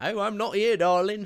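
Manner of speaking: shrill, very loud, pitched way up, belted. Describing a TV character who keeps turning up: imitating Mrs Flood. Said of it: "Missus Flood turns up ... going".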